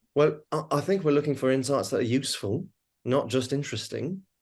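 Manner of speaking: clumsy, bad, fake put-on British accent. Quoting what Tracy would often say at BBDO, imitating Tracy, bad British accent. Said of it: "forgive the the bad British accent".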